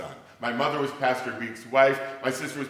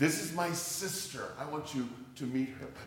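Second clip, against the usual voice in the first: mock-proud boy voice, much quieter; 9 dB quieter than usual. Quoting a six-year-old boy, imitating a proud boy. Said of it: "the 6-year-old boy says proudly".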